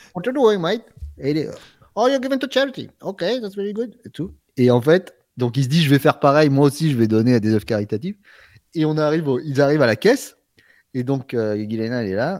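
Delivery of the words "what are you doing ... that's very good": put-on Irish accent, much higher pitch. Retelling a story, quoting Connor in his Irish accent. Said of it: "Son accent irlandais".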